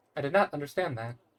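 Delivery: stock, default phone voice assistant voice. Trying out a Siri impression for the others: default Siri impression.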